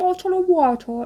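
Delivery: high-pitched, put-on British pronunciation of "water".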